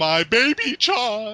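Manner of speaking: put-on shrill, very high, loud, over-the-top lovestruck shout. Retelling a dubbed cartoon's love scene: imitating Big Mac shouting. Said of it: "Big Mac shouts out".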